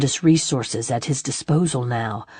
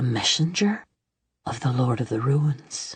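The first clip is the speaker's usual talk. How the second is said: hushed half-whisper, voice sunk right down; 5 dB quieter than usual. Reading a messenger revealing her master: half-whisper. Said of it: "She hushed her voice to a whisper".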